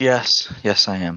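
downcast, deflated, dejected tone. Asked on the podcast whether ready for the ride, answering dejectedly. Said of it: "You said that so dejectedly".

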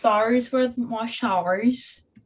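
poor put-on Australian accent. Picking a conversation back up with a friend, in an awful Australian accent. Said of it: "That was an awful Australian accent".

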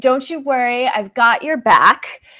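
put-on, mock-sly masculine voice. Speaker repeats what a presence is heard saying, imitating a sly masculine voice. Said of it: "a bit of a sly masculine voice".

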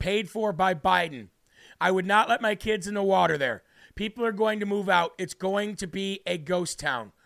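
plain

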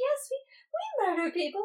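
put-on very high, sweet, offhand old lady voice. Retelling a movie where old aunts admit murders: imitating casual, sweet old ladies. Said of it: "they're so casual and so sweet".

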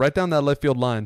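ordinary talk

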